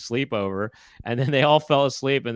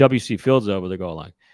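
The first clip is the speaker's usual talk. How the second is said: usual speaking voice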